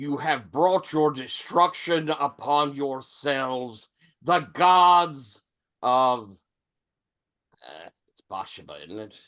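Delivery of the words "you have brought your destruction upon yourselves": grand, imposing, godlike declaiming voice. Rising up before the room, a character declares doom, booming voice. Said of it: "my voice booms out across the entire room".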